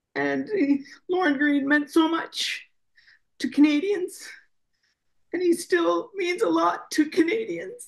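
heartfelt, moved voice. Speaking about what Lorne Greene means to Canadians, getting emotional. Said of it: "I'm getting emotional".

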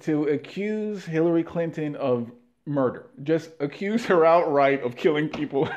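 words broken up by laughter. Speaker trying not to laugh while making a point, laughing while speaking. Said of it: "I'm laughing because it's so crazy to say it".

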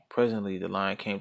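plain reading voice

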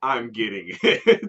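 loud, fed-up, irritated, get-off-my-back tone. Retelling a woman asked for more butter, the speaker gives her reply imitating an annoyed tone. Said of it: "Just in the tone of her voice".

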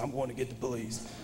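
put-on very soft, seething, quiet anger. Retelling the man's threat to get the police: imitating someone even madder. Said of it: "that made it even madder".

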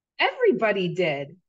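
on the defensive. Bella answers a man's question: defensive. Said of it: "Bella said defensively".

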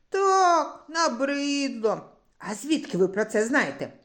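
astonished, caught-off-guard tone. Yurko answers a mocking stranger on the bench; surprised. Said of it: "Здивувався хлопчик".

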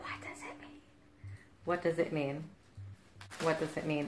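whispered. The speaker reacts to a strange note from Erika: whispering.

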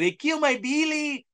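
ridiculous, high, exaggerated mock Mexican accent.

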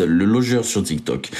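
ordinary delivery

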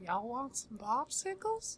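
very high, creepy voice swooping around in pitch. Responding to someone's spooky voice, doing Herbert the Pervert voice. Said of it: "Now you just sound like Herbert the Pervert".

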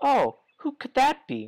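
put-on very high, drawn-out woman's voice. Playing a game and voicing a female character, in a female character voice. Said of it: "one voice for every female character".

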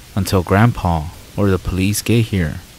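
ordinary talk

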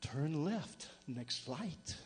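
very soft, low, hushed, sultry, seductive voice. Telling about a rental car's GPS, doing its sexy GPS woman's voice. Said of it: "this voice was so sexy".

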